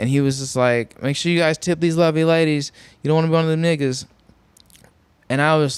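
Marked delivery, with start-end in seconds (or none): 1.0-4.0 play-acted tipsy, loose, drunken talk. Retelling what a man swaying his way out said: imitating a drunk man.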